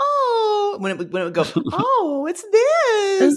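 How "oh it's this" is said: high, aghast, dismayed, appalled voice. Retelling giving a gift to their mother, the speaker imitates Mother Poodle's appalled high voice. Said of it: "when Mother Poodle's voice went really high".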